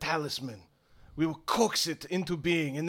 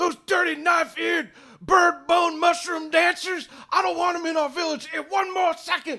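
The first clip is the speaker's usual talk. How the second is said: enraged shouting, very high-pitched; 13 semitones higher, 5 dB louder than usual. Narrator voices a man storming out of the hut, angry yelling. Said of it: "you hear him start yelling".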